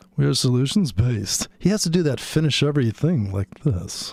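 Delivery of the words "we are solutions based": mock smooth, polished host voice. Imitating a podcast host's line: imitating a smooth host. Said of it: "It's so smooth".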